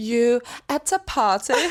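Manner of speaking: put-on British accent. Teasing the co-speaker about how they say a phrase, trying a british accent. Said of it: "this is me trying to do a British accent".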